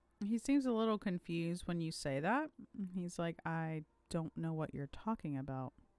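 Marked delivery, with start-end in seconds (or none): none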